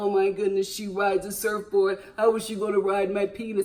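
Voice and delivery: put-on dude voice, guy-talk style. Voicing a man's fantasy thoughts aloud: imitating a dude. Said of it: "I'm talking like a dude".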